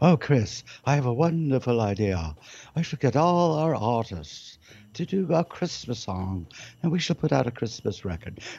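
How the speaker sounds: put-on fluid, very posh, upper-class English accent. Imitating a man speaking to chris, posh upper-class english accent. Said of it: "he has a lovely, fluid English accent, upper, very posh accent".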